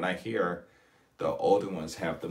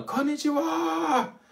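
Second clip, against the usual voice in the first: loud, raised, very high calling voice; 5 dB louder than usual. Retelling greeting old people on the street: imitating a loud greeting. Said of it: "Not yelling, but in a loud voice".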